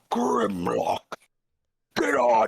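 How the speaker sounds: very low, creaky, rough, swooping monster rumble. Playing a character in a tabletop game, speaking Draconic, monstrous voice. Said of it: "in this like mo- like monstrous voice".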